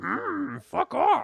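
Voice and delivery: put-on wise old creature voice. Retelling how Yoda refuses a student: Yoda voice. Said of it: "Yoda's just like".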